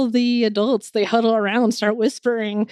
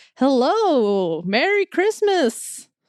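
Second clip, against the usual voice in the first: put-on drunken, jolly, cheerful voice, higher-pitched; 4 semitones higher than usual. Voicing a very drunk, jolly host opening the door: drunk jolly voice. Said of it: "the drunkest person you have ever seen".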